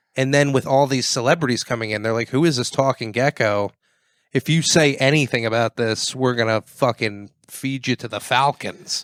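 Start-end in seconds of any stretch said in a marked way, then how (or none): none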